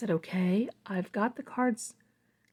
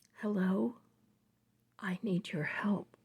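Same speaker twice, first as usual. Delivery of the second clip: humbled, chilling, feeble, meek, soft, weak voice; 6 dB quieter than usual. Retelling a silent caller finally speaking on the phone, imitating a meek, weak voice. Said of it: "very meek and soft, humbled, but very chilling and weak voice said".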